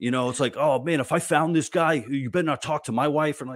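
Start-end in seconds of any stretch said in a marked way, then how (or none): 0.6-3.4 swaggering tough-guy voice, pitched up. Retelling how people react to news of a groomer, imitating a tough-guy voice. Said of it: "I'm doing that voice".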